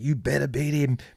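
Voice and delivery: mock urgent, pressing, high-pitched delivery. Retelling a race where someone ahead screamed at them: retelling a scream. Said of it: "he's screaming at me".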